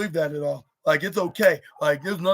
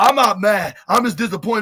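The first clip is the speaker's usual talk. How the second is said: raised, louder, angrier voice; 4 semitones higher, 5 dB louder than usual. Retelling a wrestler repeating a line while whacking a screen: imitating a louder, angrier voice. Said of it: "more louder and more angrier".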